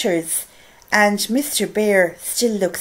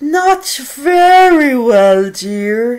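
sleepy, yawning, very slow and very drawn out; 4 semitones higher, 7 dB louder than usual. Reading a bedtime story aloud, tired, yawning Mr. Bear. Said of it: "[name] was tired. / said Mr. / And [name] was tired. / yawned Mr. / "[name]", read by [name]".

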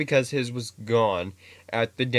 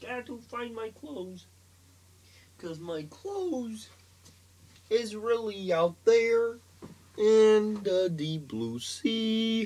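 very high, squeaky frog puppet voice; 11 semitones higher than usual. Showing off character voices one after another, as Kermit the Frog. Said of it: "Kermit for you, ladies and gentlemen".

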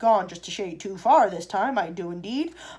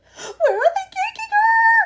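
shrill, drawn-out, rising shriek, very high; 8 dB louder than usual. Reading a woman's cry as a girl is held and carried off, shrieking. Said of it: "Shrieked Mrs".

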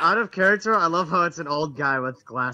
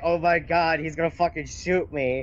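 ordinary talk

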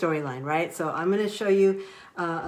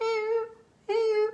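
very high little monkey call. Retelling a story's scene where a monkey calls out: little monkey voice. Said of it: "in his little monkey voice".

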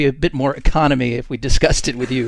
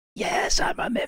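hushed whisper, very quiet, barely there. In a tabletop game, answering a player's question to a chest, in a very quiet voice. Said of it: "says very quietly".

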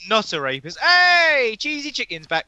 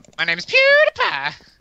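put-on Swedish accent, higher pitched and louder; 5 dB louder than usual. Announcing to the others with a PewDiePie voice. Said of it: "The Swedish know how to do the voice".

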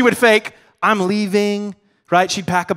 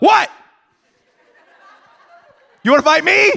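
mean, high, rough, confrontational taunting tone; 9 semitones higher, 4 dB louder than usual. Describing how she gets mean when scared, acting out a confrontational bow-up. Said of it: "She bows up".

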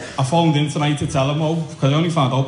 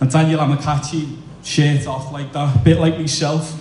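ordinary delivery

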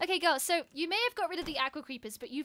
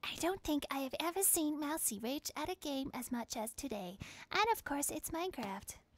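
put-on soft, hushed, creepy kid-like voice; 5 dB quieter than usual. Announcing it is time for that voice again: Creepy Kid voice. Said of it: "time for Creepy Kid voice again".

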